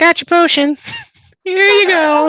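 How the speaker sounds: put-on small child's voice, pitched way up. Telling a story, speaker voices the kid who comes outside: kid's voice. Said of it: "He's like".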